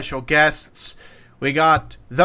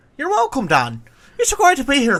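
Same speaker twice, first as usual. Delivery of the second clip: sing-song fake Bristol accent sliding into an Irish one; 10 semitones higher than usual. Playing a podcast guest, speaker tries a Bristolian attempt sounding Irish. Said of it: "Suddenly I'm starting to sound a bit Irish".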